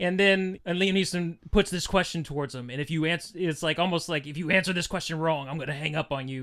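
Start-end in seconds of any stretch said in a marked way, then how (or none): 4.3-6.4 put-on tense movie voice, lower. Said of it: "He's got this tone in his voice".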